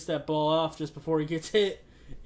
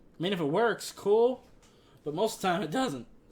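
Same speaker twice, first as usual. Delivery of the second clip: voice breaks mid-word on cool; 4 semitones higher than usual. Giving advice to young quarterbacks who are watching, voice cracking. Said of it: "my voice cracked there".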